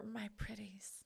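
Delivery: put-on whisper. Reading out a letter about opening a soap drawer: imitating a whisper. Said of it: "open the drawer and whisper".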